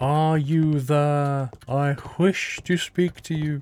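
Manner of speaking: very slow, drawn-out, careful, elaborate enunciation. Showing how to talk to ghosts: slow, elaborate pronunciation. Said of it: "you have to talk slowly as well. You have to be like".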